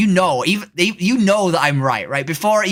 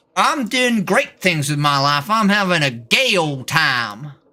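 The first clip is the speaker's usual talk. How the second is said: put-on loud Texas accent. Chatting with others while posing as a Texan: put-on loud Texas accent. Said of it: "I just talk in a really loud Austin, Texas, Texas accent".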